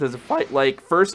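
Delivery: voice cracking. Asking the audience about a character's fighting style, voice cracking. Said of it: "that voice cracked though".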